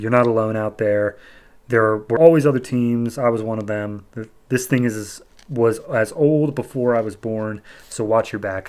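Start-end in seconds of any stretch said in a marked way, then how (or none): none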